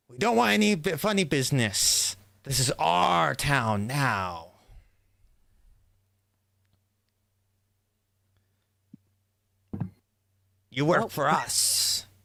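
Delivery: angry thug voice, threatening, pushed up high. The speaker voices armed halflings confronting the innkeeper; screaming at the innkeeper. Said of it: "with them screaming at the innkeeper".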